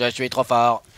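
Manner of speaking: robotic, text-to-speech style computer voice. Speaker repeats what his game character says, in Google assistant voice. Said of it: "tu vois la voix Google".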